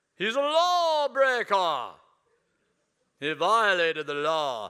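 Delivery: dramatic Bible-epic storytelling voice. Acting out the Pharisees' complaint against Jesus, doing his own Bible voice. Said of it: "I thought I'd do mine today".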